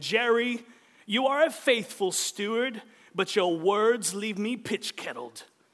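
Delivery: put-on Elizabethan Shakespearean actor accent and style. Retelling how a show's king addresses his right-hand man, in King Ezekiel's Elizabethan accent. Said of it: "he speaks with this Elizabethan accent".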